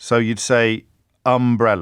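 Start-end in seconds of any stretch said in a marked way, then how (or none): 1.3-1.8 stress on first syllable of umbrella. Going through accent examples of first-syllable stress: stress on first syllable of umbrella. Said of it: "a syllable stress in the first syllable".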